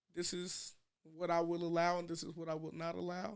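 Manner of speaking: plain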